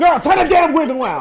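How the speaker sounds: play-acted very high, loud shriek. Retelling screaming at a show on tv: imitating screaming at the tv. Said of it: "I was screaming at the T V".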